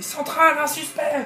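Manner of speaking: panicked yelling. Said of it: "je hurle à la radio".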